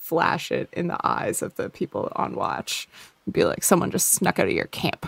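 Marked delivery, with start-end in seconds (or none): 3.6-5.1 fast, rattled-off, crappy-sounding tone. Flashing a lantern in the eyes of the people on watch, in a shitty neighbor voice. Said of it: "like a real shitty neighbor voice".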